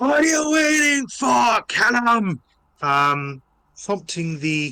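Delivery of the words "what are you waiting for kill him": very high-pitched, loud, shouted dwarf battle yell. Voicing a big bulky dwarf who yells at his allies: yelling dwarf order. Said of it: "yells out".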